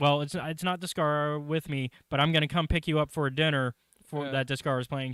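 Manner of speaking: usual speaking voice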